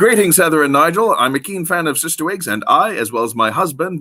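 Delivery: normal talking voice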